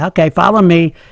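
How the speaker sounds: ordinary talk, nothing marked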